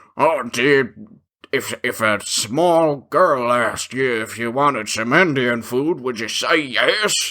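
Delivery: mock mouthful-of-food voice. Speaker retells what a guy said while eating, imitating talking with mouth full. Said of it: "while he's got a, f- a, a mouthful of food".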